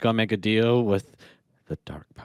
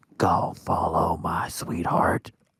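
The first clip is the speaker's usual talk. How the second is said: put-on ASMR channel delivery, drawn out; 4 semitones lower than usual. Joking about a creature luring a character: imitating an ASMR voice. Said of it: "doing some A S M R".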